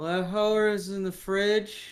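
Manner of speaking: put-on slow, dazed, spaced-out stoner voice. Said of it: "he's like".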